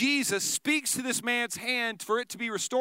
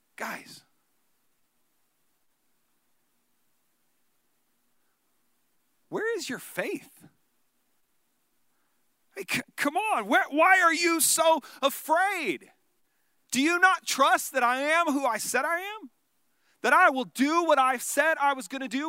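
voice edged with frustration, exasperated; 4 semitones higher than usual. Retelling Jesus speaking to those who were afraid, acting frustrated. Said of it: "you can hear this frustration in his voice".

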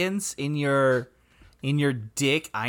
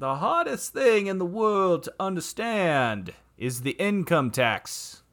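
put-on genteel Southern accent; 3 semitones higher than usual. Asked what he would sound like, do Mark Twain as a Southern gentleman. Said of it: "he's a Southern gentleman".

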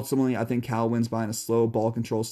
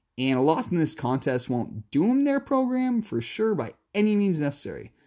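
voice breaks on "necessary" like a puberty crack; 6 semitones higher than usual. Previewing a week one matchup, the speaker's voice cracks mid-sentence: voice cracking. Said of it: "My voice just cracked there like I was going through puberty".

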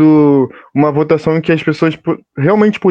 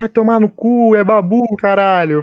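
acted-out wild shouting, higher pitch; 6 semitones higher than usual. Retelling celebrating with the neighbourhood, shouting about babu: retelling wild shouting. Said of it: "gritando muito".

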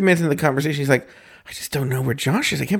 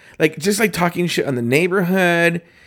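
usual speaking voice

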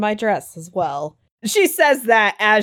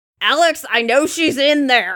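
gruff, pitched-up yell; 5 semitones higher than usual. Game master voicing Anastasia banging on Alex's back door: gruff yell as Anastasia. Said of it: "Gruffly yell".

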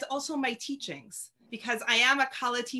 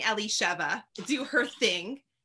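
usual speaking voice

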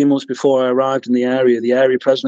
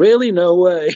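dead-sarcastic, mock surprised tone; 6 semitones higher than usual. Retelling their reply when the president rang with news they already knew, dead sarcastic. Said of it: "I was being dead sarcastic".

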